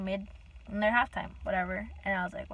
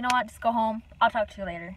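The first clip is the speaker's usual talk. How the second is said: ordinary talk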